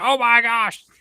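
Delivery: very high, very loud, shrill yell. Imitating what Ryan says first at any event: imitating Ryan yelling. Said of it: "Ryan was yelling most of the time".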